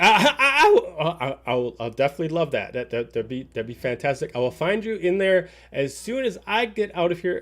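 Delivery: stammering, struggling to speak. Narrating a scene, a man answers a woman's invitation: stammering, struggling to speak. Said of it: "he's having a hard time s- speaking out".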